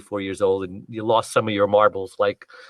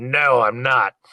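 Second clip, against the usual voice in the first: cantankerous, curt, snarly, abruptly cut off; 3 semitones higher, 3 dB louder than usual. Retelling how a man on the road cut him off, imitating a snarly voice. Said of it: "with a snarly voice".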